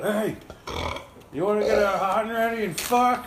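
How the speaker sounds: play-acted, very high-pitched hollering yell. Retelling how one of the group called out to girls ahead on the street, retelling a yell. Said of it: "Brent yells out".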